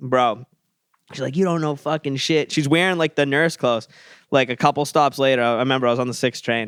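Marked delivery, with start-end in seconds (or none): 1.4-2.5 mock screaming. Recounting an argument on the train, speaker imitates a woman screaming. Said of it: "she just immediately goes to screaming".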